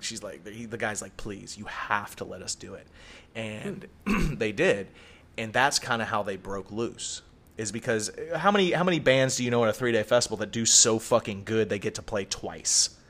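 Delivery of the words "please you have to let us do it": hushed, breathy, whispered on-your-knees pleading. Speaker retells a festival director pleading with a band, imitating someone begging. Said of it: "like hands and knees begged".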